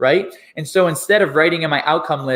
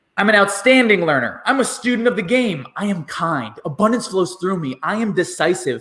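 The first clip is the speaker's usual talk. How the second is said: said with intensity and force; 4 semitones higher than usual. Showing how to say I-am affirmations, said with intensity. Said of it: "you say it with intensity".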